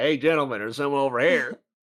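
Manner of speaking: put-on sudden Southern country accent slipping in. Mocking another player's slip into a Southern accent: imitating a Southern accent. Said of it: "You're like".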